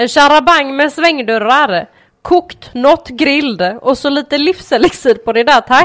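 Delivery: thick, laid-on Gothenburg dialect. Retelling the father ordering from the IKEA cashier, in a loud broad Gothenburg accent. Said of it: "säger högt på bred göteborgska".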